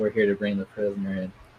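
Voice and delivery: low, flat, droning one-note monotone. Recounting how they deliver a line about a prisoner: flat monotone. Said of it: "just a monotone tone, I just go".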